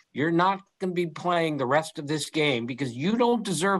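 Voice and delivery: ordinary talk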